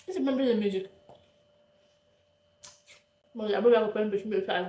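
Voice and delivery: speaking with mouth full, chewing. Speaker eating an apple keeps talking, with mouth full. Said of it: "On parle pas la bouche pleine, je sais".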